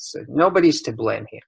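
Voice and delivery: ordinary talk, nothing marked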